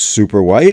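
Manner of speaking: ordinary talk, nothing marked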